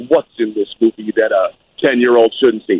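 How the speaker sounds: very stern, grave tone. Acting out your dad questioning a man selling movie tickets, very stern, lawyerly Fred Carman voice. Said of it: "very stern, lawyerly Fred Carman voice".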